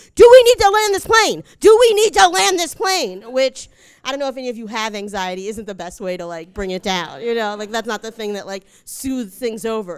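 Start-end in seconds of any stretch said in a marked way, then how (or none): 0.2-3.3 mock shouting, higher, louder, slower. Recounting crying on a plane, the speaker quotes an air marshal, retelling a shout in the face. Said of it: "he starts shouting in my face".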